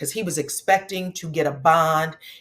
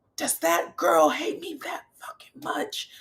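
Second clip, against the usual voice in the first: mock very high, rough, top-of-the-lungs screaming; 12 semitones higher, 3 dB quieter than usual. You're retelling how a man in jail reacted to news about the daughter's police statement; imitate him screaming. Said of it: "he started screaming".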